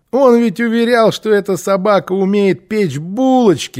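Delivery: mocking, scoffing tone. Kirre, displeased with the show, speaks up about the dog, mocking. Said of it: "насмешливо проговорил Кирре".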